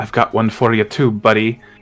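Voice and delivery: stage mutter, said as an aside. Speaking in character to a shaman who attacked him: said under his breath. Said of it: "I'm gonna say under my breath".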